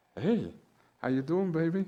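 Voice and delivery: loving, affectionate, doting uncle voice. Retelling answering a phone call: imitating uncle's loving voice. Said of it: "I impersonated my uncle".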